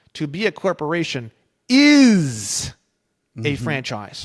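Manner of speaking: is heavily stressed, hit hard. Reading a sentence as its author intended, strong emphasis on is. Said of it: "the word is is italicized, ... it would be read like this".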